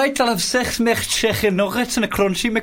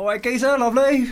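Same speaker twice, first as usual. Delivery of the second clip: put-on London geezer-style accent. Asked during a chat about accents to show a london accent: london accent. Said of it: "What's your London accent?".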